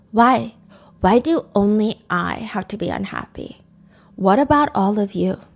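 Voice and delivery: put-on empty, toneless, blank delivery. Retelling what a colleague said during an attack, imitating a blank voice. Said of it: "In a blank voice".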